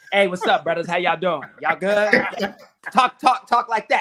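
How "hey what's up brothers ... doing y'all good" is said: casual, easygoing tone. Acting out Derrick Henry greeting people, towel around his shoulders: imitating Derrick Henry. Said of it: "He's got that kind of energy where it's just towel around the shoulders".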